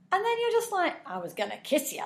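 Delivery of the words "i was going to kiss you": sleazy, leering, creepy delivery. Speaker acts out how the listener might behave, doing an impression of a creep. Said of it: "That's quite a good impression".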